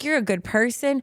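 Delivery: put-on hyped-up, pumped-up, encouraging tone. Acting out a mirror pep talk: acting out hyping up a bestie. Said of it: "gas yourself up like you would a bestie".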